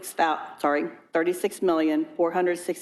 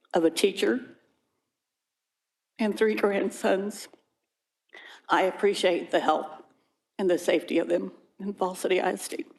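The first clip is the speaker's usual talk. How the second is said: tearful, emotional, on the edge of crying. Speaking as a mother and grandmother during public comments, emotional, near tears. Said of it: "I get emotional".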